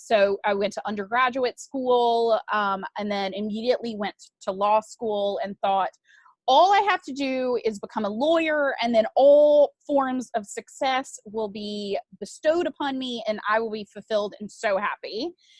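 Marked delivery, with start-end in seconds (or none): none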